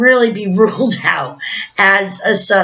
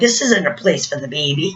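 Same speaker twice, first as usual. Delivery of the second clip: mocking, sarcastic, cutting tone; 6 semitones lower, 4 dB quieter than usual. Retelling what a man said to a mother about her baby: imitating a sarcastic remark.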